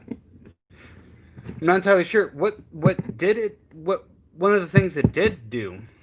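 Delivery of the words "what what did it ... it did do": stuttering, stammering, tripping over words. Explaining the results of a test, stuttering. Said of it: "Sorry for stuttering there".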